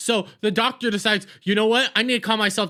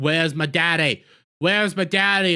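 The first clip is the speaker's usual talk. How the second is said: mock childish voice, lower; 5 semitones lower than usual. Retelling how a little girl keeps asking for her daddy: imitating a girl acting like a four-year-old. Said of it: "She acts like a four-year-old the entire time".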